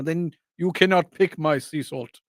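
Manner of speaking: fake put-on Greek accent. In an improvised bit about salt pickers, the character answers the peasant in a put-on Mediterranean accent. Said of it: "was that a Greek accent?".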